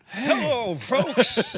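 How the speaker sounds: very loud, very high, booming bellow. Greeting everyone at the start when asked to: Harry Caray voice. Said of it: "You should do it like your Harry Carey voice".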